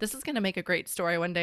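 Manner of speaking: ordinary delivery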